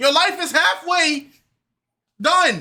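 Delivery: loud yelling. Ranting at contestants about star signs, told to stop: yelling at contestants. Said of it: "Stop yelling at them".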